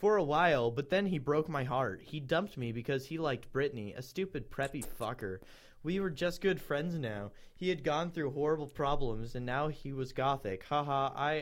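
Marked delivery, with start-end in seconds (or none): none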